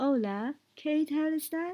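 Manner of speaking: Spanish spoken with an English accent. Showing how english people speak spanish, with an english accent. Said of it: "They speak with the English accent".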